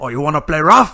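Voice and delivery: very loud, high, taunting gangster-style tough-guy shout. Repeating the movie gangster's line after the other speaker: loud Scarface impression. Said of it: "You have to get loud".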